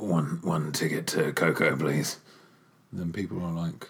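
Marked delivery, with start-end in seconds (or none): 0.0-2.2 creepy, stupid put-on voice, much lower. Explaining why the kids must come along, in a stupid paedophile voice. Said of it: "It's your stupid paedophile voice".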